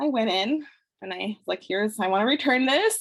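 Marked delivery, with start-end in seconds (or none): 1.7-3.0 put-on nervous speech, higher pitch. Retelling handing in a store return alone: imitating own past nervousness. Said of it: "Really nervous".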